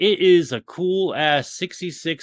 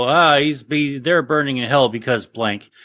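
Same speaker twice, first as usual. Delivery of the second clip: ordinary delivery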